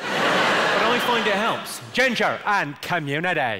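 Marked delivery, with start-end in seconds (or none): 1.9-3.6 Belfast, Northern Irish accent. Addressing the audience, demonstrating a practice phrase in a Belfast accent. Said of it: "the phrase I use to get the Belfast accent right".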